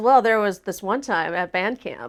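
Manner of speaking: ordinary talk, nothing marked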